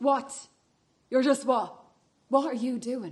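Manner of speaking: shouting. Cutting someone off mid-sentence in a heated quarrel: shouting. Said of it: "Don't shout at me".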